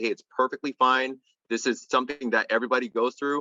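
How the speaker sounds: plain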